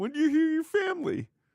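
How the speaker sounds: high-pitched, fast, mocking impression voice. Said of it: "apparently she said".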